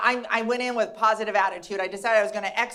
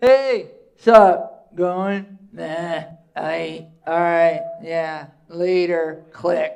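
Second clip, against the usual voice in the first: put-on very slow, low, loud teenage boy grunting; 5 semitones lower, 5 dB louder than usual. Doing a comedy bit about teenagers on the phone: imitating teenage boys on the phone. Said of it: "They're like this".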